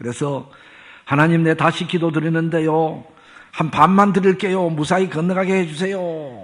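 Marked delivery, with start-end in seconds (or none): 1.0-6.0 loud, high-pitched shouting. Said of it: "또 소리를".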